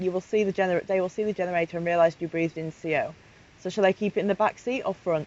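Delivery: ordinary delivery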